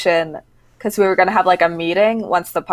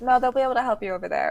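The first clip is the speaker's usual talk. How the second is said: polished, soft, pitched-up customer-service voice; 5 semitones higher, 8 dB quieter than usual. Retelling answering a guest who asked to be checked out: cast member voice. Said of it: "I just went in the cast member voice".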